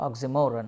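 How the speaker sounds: oxymoron with the mo syllable stressed. Explaining how oxymoron is pronounced: stress on mo in oxymoron. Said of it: "The stress is on mo part".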